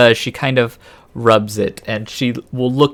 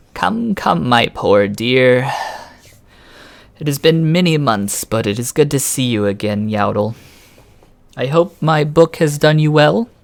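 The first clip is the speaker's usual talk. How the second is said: put-on crackly, dry, crackling old crone voice; 3 semitones higher than usual. A game master voices a woman greeting a player's character, voice crackling like dry weeds. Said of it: "her voice crackles like dry weeds".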